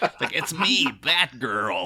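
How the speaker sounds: terrible, clumsy put-on American accent. Mocking how the English character disguises herself as Batgirl, in a terrible American accent. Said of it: "puts on a really terrible American accent".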